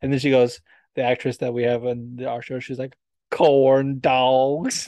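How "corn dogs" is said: put-on Italian accent putting on a Southern accent. Quoting the actress on their show, in an Italian doing a Southern accent. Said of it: "she does sound like an Italian doing a Southern accent".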